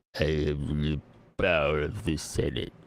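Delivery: put-on very low, slow, drawn-out old man droning voice. Showing how to do the prequel meme line: Droopy Dog as an old man. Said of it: "it's like if Droopy Dog was an old man".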